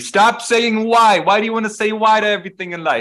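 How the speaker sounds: shrill, very high, loud shouting. Retelling how a guy in Marseille yelled at the speaker: retelling a yell. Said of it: "The guy was yelling at me".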